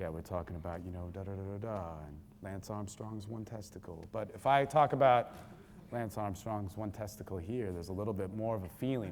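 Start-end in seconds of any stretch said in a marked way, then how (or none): 0.0-4.0 low, seductive, sultry put-on sexy voice. Showing how a line sounds said the sexy way: sexy voice. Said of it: "even if I put on the sexy voice".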